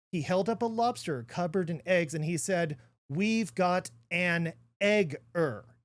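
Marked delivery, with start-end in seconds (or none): 3.0-5.5 very slow, deliberate enunciation, word by word. Retelling what a lobster farmer said, on purpose very slowly. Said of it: "I'm going to say this very slowly".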